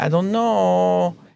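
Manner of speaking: put-on Italian accent with drawn-out "know". Retelling a character's reply from a show, in a put-on Italian accent. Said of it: "He didn't speak like that".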